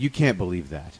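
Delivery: matter-of-fact, plain delivery with no emphasis. Quoting a cartoon scene where He-Man calls someone out: imitating He-Man's matter-of-fact delivery. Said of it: "'Cause it's so matter of fact".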